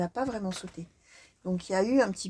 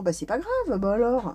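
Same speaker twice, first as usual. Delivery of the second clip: acted-out sugary, sweet, naive, innocent-sounding tone. Imitating the ex coming back unbothered: imitating an innocent, sweet tone. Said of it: "qui arrive la bouche en cœur".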